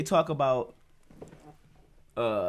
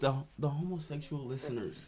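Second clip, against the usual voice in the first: lowered, softer, hushed voice on one word. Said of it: "why you whisper the word homosexual".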